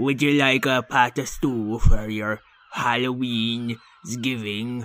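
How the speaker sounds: put-on pirate voice. Offering stew to a trick-or-treater as Patty the Pirate. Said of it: "it's me, Patty the Pirate".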